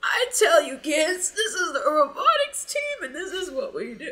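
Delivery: put-on high-pitched, swooping elderly old man voice, storyteller-like. Imitating him joking to the others about the robotics team, in an old man voice. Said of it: "he starts using this old man voice and was like".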